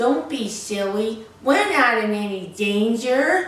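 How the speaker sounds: stupid, silly, daft-sounding put-on voice. Retelling what he kept saying despite begging: imitating his stupid voice. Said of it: "in that stupid voice that he would use".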